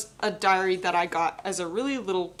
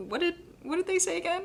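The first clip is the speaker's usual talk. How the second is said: much higher, puzzled tone. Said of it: "you want me to be like".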